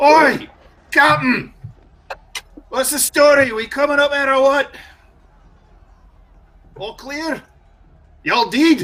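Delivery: gruff, rough dwarf holler, piercing and very high. Voicing a Reaver Dwarf crewman calling from behind: gruff piercing voice. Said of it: "a gruff, piercing voice kind of splits the night air".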